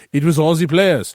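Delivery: bad put-on French accent. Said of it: "That was a bad French accent".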